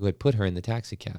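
plain reading voice

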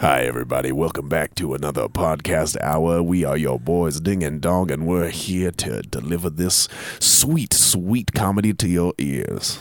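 put-on deep voice. Opening the podcast episode as a bit: put-on deep voice. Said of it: "deep voice".

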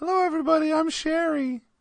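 very high-pitched put-on female voice. Answering whether they'd change voice, said in a put-on female voice. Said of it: "change your voice? I will".

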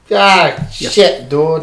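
clumsy fake Boston accent. Closing a podcast with a joke about Boston listeners: bad Boston accent. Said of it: "I don't do a good Boston accent".

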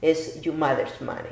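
ordinary delivery

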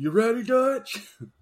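very high-pitched character voice. Hearing about a creator's game stunt videos, a listener quotes a line in Arthur Morgan voice. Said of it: "he would be doing the voice of Arthur Morgan".

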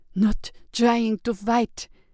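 slow, pained groan, forced out through pain. Trapped in debris with her arm hurt, she answers the approaching priest, groaning. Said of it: "she groaned".

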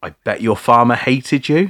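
high-pitched shout. Recounting a dream, the speaker reenacts what he yelled: retelling his own shouting. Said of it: "I was shouting like".

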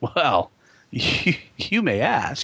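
suave, smooth, slow, swooping, drawn-out delivery. Imitating Kirk answering Saavik's question: suave Kirk imitation. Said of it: "He thinks he's being all, like, suave".

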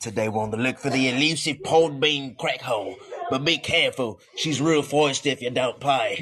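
put-on Australian outback wildlife-host accent. Speaker's impression of themself in the outback: put-on australian accent. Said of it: "That was my impression of me on the outback".

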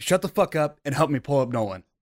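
ordinary talk, nothing marked

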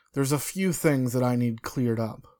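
ordinary delivery

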